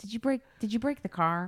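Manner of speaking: put-on exasperated voice. Retelling her husband's reaction after a car mishap, retelling an eye-rolling question. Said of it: "he just rolls his eyes".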